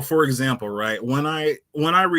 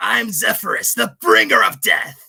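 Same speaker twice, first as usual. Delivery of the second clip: rough, rasping, grainy, creaky villain voice, pitched up; 7 semitones higher, 4 dB louder than usual. Speaker shows the voice of the character he will play: grainy Zephyrus villain voice. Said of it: "he has like kind of a grainy voice, almost jokery".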